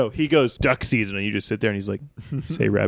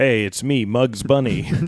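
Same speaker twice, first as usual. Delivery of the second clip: put-on deeper voice, much slower; 3 dB louder than usual. Playing a mugger who is told to sound deeper and tries a new line, deeper mugger voice. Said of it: "Try to make your voice deeper".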